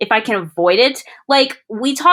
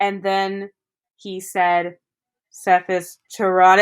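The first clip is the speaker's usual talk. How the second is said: flat, slow, lifeless monotone drone; 3 semitones lower than usual. Retelling a presentation at Ford's Theater: imitating a monotone speaker. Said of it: "in the most monotone voice I have ever heard".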